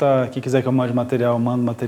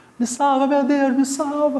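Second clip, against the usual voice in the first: put-on panicked scream, higher pitched; 12 semitones higher than usual. Retelling a turbulent flight, a passenger yelling: imitating someone screaming in panic. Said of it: "Por que que você tá gritando tanto?".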